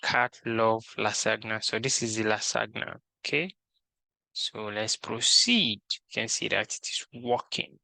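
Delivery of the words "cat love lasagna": ordinary talk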